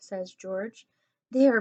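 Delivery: ordinary delivery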